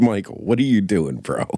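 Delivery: ordinary talk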